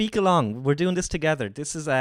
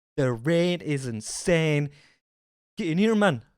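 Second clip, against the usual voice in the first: put-on Geordie accent. Imitating how Rachel starts off her streams: imitating Rachel. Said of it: "That's how Rachel starts off her streams".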